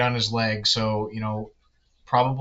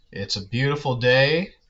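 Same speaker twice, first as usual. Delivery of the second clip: dry, sarcastic delivery. Answering what's going on while the weather is bad: sarcastic. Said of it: "I'm being really sarcastic".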